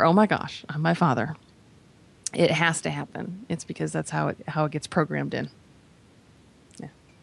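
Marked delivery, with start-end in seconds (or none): none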